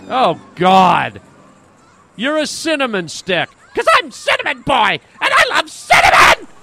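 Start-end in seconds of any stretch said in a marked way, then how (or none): 3.7-6.3 hollered at full tilt, pitched-up yelling like an announcer. Playing a kid in costume, shouting a catchphrase: yelling. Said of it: "Stop yelling".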